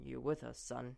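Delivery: rough-edged, low, gruff fatherly murmur. A father asks his son, just coming round in bed; gruff voice. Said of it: "Balinor's voice is gruff".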